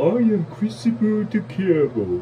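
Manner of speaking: very high, loud, silly put-on character voice. Speaker offers to do a character's voice for listeners: funny character voice. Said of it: "I could do the voice of him as well. Take a listen".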